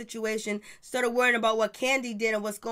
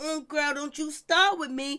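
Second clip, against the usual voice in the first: mock nasty, mean, evil-sounding, threatening; 4 semitones higher than usual. Retelling a reality-show argument, imitating Kandi: mean and evil. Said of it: "looking at Nene all mean and evil".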